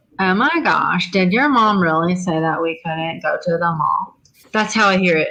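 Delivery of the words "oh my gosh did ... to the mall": put-on irritating, annoying teenage girl voice. Explaining how they hear a question in their head: annoying teenage girl voice. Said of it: "I hear it in an annoying teenage girl voice".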